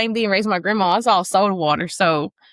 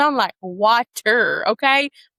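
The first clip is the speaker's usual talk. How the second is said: ordinary delivery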